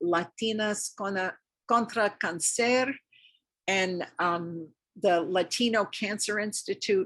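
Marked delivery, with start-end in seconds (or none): 0.0-2.9 poor pronunciation in a bad Spanish accent. Listing cancer support groups, the speaker says a spanish group name in a bad spanish accent. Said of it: "Excuse my bad Spanish accent".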